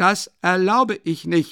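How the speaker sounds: screaming outburst, loud and high, each word held. Raskolnikov shouts at Porfiry Petrovich a second time: screaming. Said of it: "schrie Raskolnikow noch einmal".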